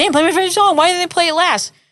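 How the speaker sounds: put-on, very high, aggrieved, pissed-off tone. Retelling his complaint at a concert: imitating someone pissed off. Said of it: "He was pissed off".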